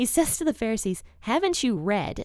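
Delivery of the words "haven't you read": put-on snarky voice. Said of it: "he's very snarky".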